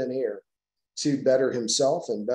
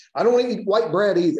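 put-on cranky, grumpy old man voice, pitched up; 7 semitones higher, 5 dB louder than usual. Quoting a man's reply to a question, retelling in grumpy old man tone. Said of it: "he'd say it kind of that grumpy old man tone".

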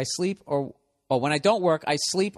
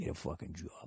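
whispered, under-the-breath muttering; 10 semitones lower, 17 dB quieter than usual. Speaker imagines listeners in their cubicles muttering to themselves, imitating someone mumbling. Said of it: "just mumbling".

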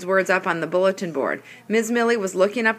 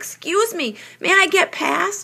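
very high, slow, drawn-out yell; 11 semitones higher than usual. Donovan yells while moving through the crowd to get his word jar: yelled. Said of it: "He yelled".

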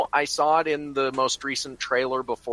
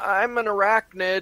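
groggy, dazed, woozy, pitched-up voice; 6 semitones higher than usual. Suggesting what Peter Parker could have said after being smashed, woozy Peter Parker voice. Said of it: "could have said with a kind of woozy voice".

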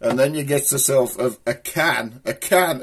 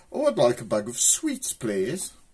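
put-on upper-class posh accent, sing-song and drawn out; 5 dB quieter than usual. Contrasting local speech, the speaker imitates what a posh person would say: posh accent. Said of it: "Or a posh person say".

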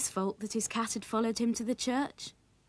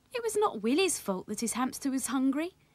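plain reading voice

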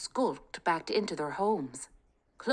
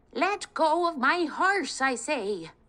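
put-on old woman voice, shrill, drawn-out, outraged screech; 8 semitones higher, 4 dB louder than usual. Reading a story, an old woman confronts soldiers capturing her horse: screeching old woman. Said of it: "screeched an old woman, ... Kate was lost in her thoughts of him when suddenly a screeching voice shattered the peace. ... screeched an old woman".

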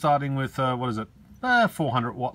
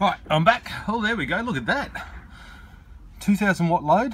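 winded, breathless, high-pitched voice; 5 semitones higher than usual. Speaker back from running to the house during a load test, out of breath. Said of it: "I'm out of breath".

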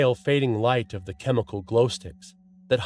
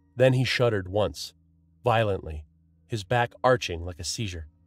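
plain reading voice

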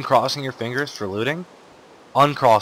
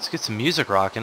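ordinary talk, nothing marked

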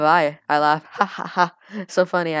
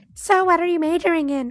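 put-on very high-pitched girl voice; 13 semitones higher than usual. Narrating a story, voicing Jasmine as she sits beside the narrator, really high-pitched voice. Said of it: "I have to give her a really high-pitched voice".

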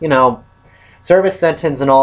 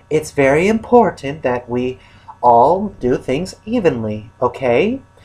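sweet little angel voice. Retelling a film scene, quoting Nurse Ratched, imitating Nurse Ratched's nice angel voice. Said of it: "in her nice angel little voice".

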